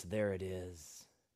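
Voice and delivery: very low, menacing, sinister voice. Imagining someone peeling back a casket and speaking: sinister voice. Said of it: "say in a sinister voice".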